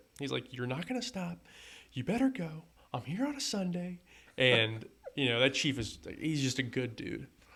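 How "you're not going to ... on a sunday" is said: mock screaming, high and driving. Retelling how Chief screamed at him during his run: imitating Chief screaming. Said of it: "he starts screaming at me".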